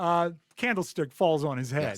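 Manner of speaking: ordinary talk, nothing marked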